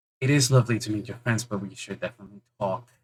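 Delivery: close, very quiet half-whisper right beside the listener. Voicing a character who leans close so only one can hear: half-whispering.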